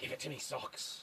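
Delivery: hushed, breathy demonic whisper. Joking with others while putting on socks: demonic voice.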